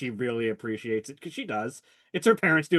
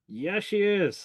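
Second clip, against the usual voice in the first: pitched-up, forced out through gritted teeth; 8 semitones higher than usual. Retelling how the listener's father answered, through gritted teeth. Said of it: "It's like through gritted teeth".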